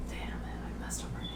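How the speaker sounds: soft, quick whispered aside to self.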